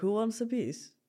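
soft, Russian-sounding speech. Talking with another speaker, imagining a man's line in the villa, failed Giovanni accent impression. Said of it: "That sounded Russian, but it was not meant to be Russian".

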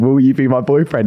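ordinary delivery

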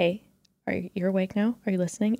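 soft, hushed, quiet coaxing voice. Retelling waking a partner at night, imitating speaking quietly. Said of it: "kinda quietly".

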